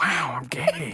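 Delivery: breathy, airy voice pushed through tight lips. Saying a requested line on demand: Owen Wilson impression. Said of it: "Say something like".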